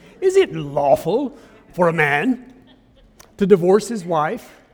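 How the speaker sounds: loud, slow, put-on snide tone. Retelling a Bible passage, voicing the Pharisees' question in a mock-snide voice. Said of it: "I just have to say it with a snide voice".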